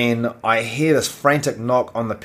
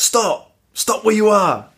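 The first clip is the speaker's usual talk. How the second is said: play-acted, very high shout; 10 semitones higher, 4 dB louder than usual. Retelling chasing a robber with a knife, reenacting shouting at him to stop. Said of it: "i'm shouting out".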